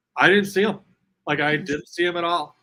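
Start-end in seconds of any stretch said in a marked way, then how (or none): none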